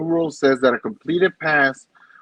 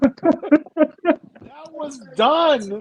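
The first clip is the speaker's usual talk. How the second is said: put-on screaming yell, higher in pitch; 13 semitones higher than usual. Retelling screaming at the TV over the game clock: imitating own screaming at the TV. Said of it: "I'm screaming at the T V like".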